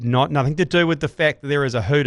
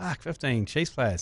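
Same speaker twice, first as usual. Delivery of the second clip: put-on muttering under breath, quieter; 8 dB quieter than usual. Retelling own earlier remark about fifteen Chiefs players: imitating muttering under breath. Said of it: "I said this under my breath".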